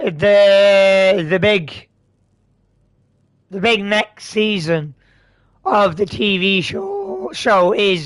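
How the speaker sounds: slow, stalling, stumbling speech with voice crack. Speaker moving on to other news, voice cracking. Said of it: "pardon my voice crack".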